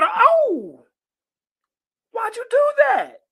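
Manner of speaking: very high, drawn-out, shocked and hurt cry of pain. A woman just bitten on the hand by her snake cries out in shock. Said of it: "And the woman cried".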